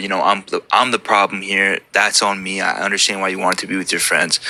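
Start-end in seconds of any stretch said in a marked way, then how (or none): none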